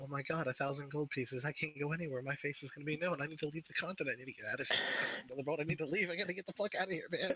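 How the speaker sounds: mumbling to himself, anxious. A character reacting during the game: muttering under his breath. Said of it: "it's just him under his breath".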